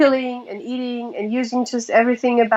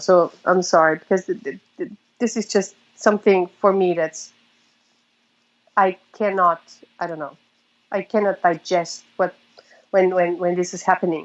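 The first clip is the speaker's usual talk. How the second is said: rushed, emotional, stumbling, tumbling words; 5 semitones lower than usual. Speaking to listeners and apologizing for getting emotional, emotional. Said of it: "And I'm getting emotional now".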